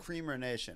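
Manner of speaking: normal talking voice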